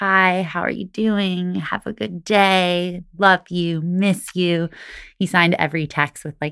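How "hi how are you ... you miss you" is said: mock slow, groggy, just-woken-up voice. Retelling an early morning phone call picked up in bed: imitating a groggy voice. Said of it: "is groggy and just says".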